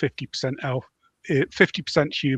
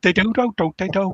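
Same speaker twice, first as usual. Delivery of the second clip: exaggerated Scouse accent, loud, high, belted out; 7 semitones higher, 5 dB louder than usual. Joking about how someone will read the book aloud, doing a Three Scousers Scouse accent. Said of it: "the Three Scousers on Harry Enfield".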